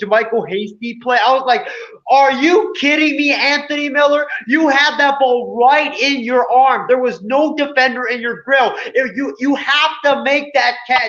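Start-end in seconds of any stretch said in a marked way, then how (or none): 2.1-11.1 scolding yell, screaming kept at moderate loudness. Retelling a dropped pass while watching the game: imitating himself screaming at the TV. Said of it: "I was screaming at the T V".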